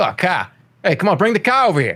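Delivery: Boston accent, "car" with ah. Video maker showing how he ended sentences in normal life, in a boston accent. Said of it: "a Boston A-H".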